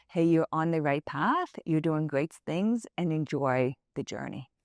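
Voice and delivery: ordinary talk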